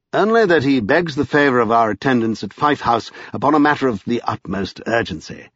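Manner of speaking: usual speaking voice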